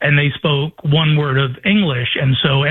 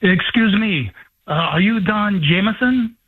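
little man's put-on French accent; 6 semitones higher than usual. Retelling a fan meeting at a festival, imitating a little French guy. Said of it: "this is a little French guy, and he goes".

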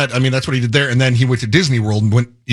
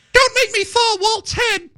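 high-pitched, slow cartoon mouse voice. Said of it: "that's Mickey".

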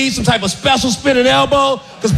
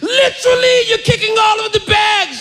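bad British accent with a high, scolding shout; 8 semitones higher than usual. Retelling a subway security guard scolding the speaker, retelling a yell in bad british accent. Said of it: "He's yelling at me in British".

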